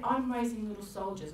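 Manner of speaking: normal talking voice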